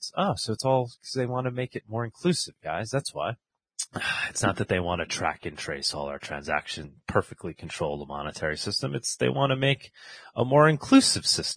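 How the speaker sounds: heavily sarcastic tone. Presenter reacting to a news report, speaking sarcastically. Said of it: "I'm being sarcastic".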